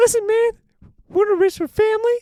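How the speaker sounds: put-on shrill little-kid voice, very high and loud. Joking about what nine-year-old Bob would have said, imitating nine-year-old Bob. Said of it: "Little nine year old".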